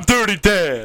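put-on cartoon starfish character voice. Joking with the others about Dirty Dan: Patrick impression. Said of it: "my Patrick impression".

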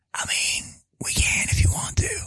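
hushed, whispered voice. One host offers to end the show: whispering. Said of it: "Why are we whispering?".

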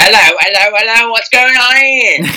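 put-on British policeman voice. In a joking exchange, the speaker switches into a British policeman voice. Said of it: "you've become a British policeman".

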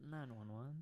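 sultry, sexy, seductive come-on delivery. Giving a phone number when asked, saying it sexy. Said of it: "why'd you say nine one one like sexy?".

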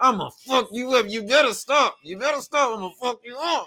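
very high voice through clenched teeth. Describing Cam holding someone in a headlock, Cam talking through clenched teeth.

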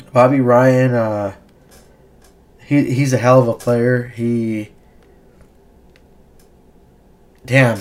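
slow delivery, moved and getting a little emotional. Praising a hockey player who returned to the game, getting emotional. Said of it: "I'm getting a little emotional right here".

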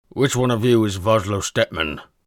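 loud grumble through food, mouth full. Narrating a man asking which of those standing he seeks, loud grumble, mouth full. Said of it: "the fat man grumbled loudly, chewing food all the while".

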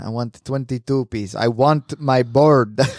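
put-on, vaguely Russian accent. Retelling what a customer kept saying while ordering, vaguely Russian accent. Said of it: "Sounds vaguely Russian".

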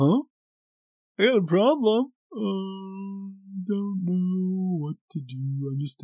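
blank, dopey, clueless drawl, high and very slow. Imitating an employee who brings a problem with a blank stare: imitating a clueless employee. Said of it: "Sorry, I'm being dumb".

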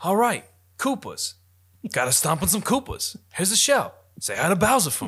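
high, swooping Boston accent. Imagining Mario voiced by Mark Wahlberg: Mark Wahlberg Boston accent. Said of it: "You wanna give him that Boston accent?".

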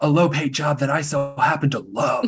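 put-on voice of a sensitive man. Imitating a person from a show complaining about his job: imitating Michael. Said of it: "That was a good impression".

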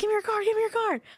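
mock very high, urgent yelling. Recalling yelling from the office to someone in another room for a card: retelling a yell. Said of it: "So now I'm yelling at him from the other side".

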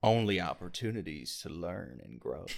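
put-on laid-back Texan drawl. Reading a saying aloud as Matthew McConaughey: Matthew McConaughey voice. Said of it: "let me do a McConaughey".

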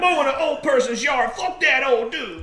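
Detroit juggalo talk. Mocking what local juggalos would say: imitating juggalos. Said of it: "Fucking juggalos running around Detroit like".

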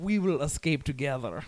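put-on German accent. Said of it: "Your German accent".

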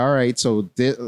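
plain

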